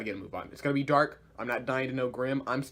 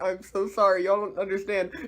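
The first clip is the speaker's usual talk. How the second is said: play-acted crying, high and tearful; 6 semitones higher, 4 dB louder than usual. Recapping a show, the speaker quotes a character apologizing to the group, imitating crying. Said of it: "he's like crying".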